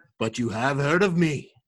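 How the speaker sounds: put-on movie pirate captain voice. Quoting Pirates of the Caribbean, in a Jack Sparrow impression. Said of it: "That's an excellent Jack Sparrow impression also".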